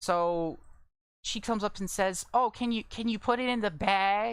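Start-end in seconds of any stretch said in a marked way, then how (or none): 2.3-4.3 put-on, mocking, very loud, high-pitched voice. Retelling a customer's request at the bagging area: imitating a customer asking loudly. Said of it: "Like, real loud".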